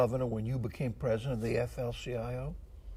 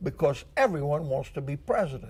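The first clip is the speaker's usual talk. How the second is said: ordinary talk, nothing marked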